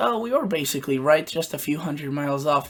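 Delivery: heavy, obvious sarcastic tone. Mocking forecasters who won't admit being wrong: sarcastic National Weather Service imitation. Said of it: "that was obviously sarcastic".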